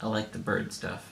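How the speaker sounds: low, soft, dead-straight deadpan voice.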